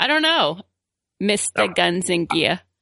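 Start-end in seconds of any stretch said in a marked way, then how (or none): 1.2-2.6 put-on, mocking New York accent.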